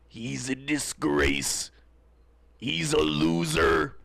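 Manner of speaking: gravelly wrestler voice, "loser" drawn out. Podcast promo bit about Buddy Brown, done in a Macho Man voice. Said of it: "I've been doing the Macho Man voice a lot around the house lately".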